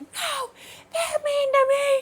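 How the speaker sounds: very high, drawn-out wailing sob, scream crying. Retelling how a child at work screamed and cried while hitting her: imitating a child scream crying. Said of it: "she's still scream crying".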